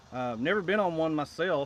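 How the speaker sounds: ordinary delivery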